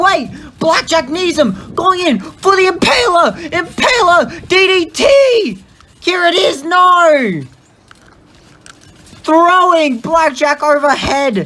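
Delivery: very high-pitched voice cracking and breaking. Calling a wrestling match as big moves land, voice breaking. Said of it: "My voice is breaking right now".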